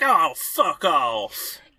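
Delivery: high-pitched, sing-song, swooping, dismissive country voice. Retelling Martha telling Zod off, in country Martha mode. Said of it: "Martha's gone back to country Martha mode".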